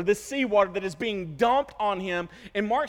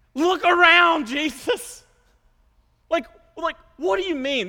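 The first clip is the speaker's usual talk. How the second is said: put-on sarcastic voice, higher and louder; 8 semitones higher, 6 dB louder than usual. Imagining Peter answering Jesus after he wakes: imitating Peter being sarcastic. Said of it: "This is where the sarcasm would ensue".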